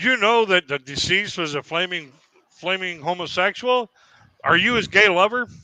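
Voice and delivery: stern, official, commanding authoritative voice. Recounting questioning someone at their parents' trailer: retelling an authoritative voice. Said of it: "using my authoritative voice".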